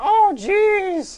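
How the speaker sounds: goblin voice, high and slow.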